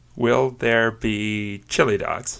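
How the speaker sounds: slow, chili and dogs split apart. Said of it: "That's two words".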